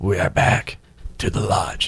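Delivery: strange, slow, throaty voice. Announcing the return from a break on radio: strange throat-clearing voice. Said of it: "why you just made that voice".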